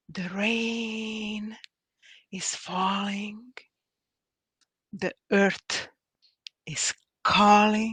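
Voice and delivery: slow, half-whispered poetry reading. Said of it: "I'm gonna try to read this slow now".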